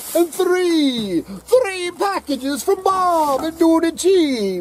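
very high, showy, theatrical put-on character voice. Counting packages on the way back, in the Count voice. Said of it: "He did not like that voice".

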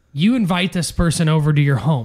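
ordinary talk

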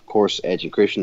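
ordinary talk

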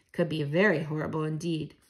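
ordinary delivery, nothing marked

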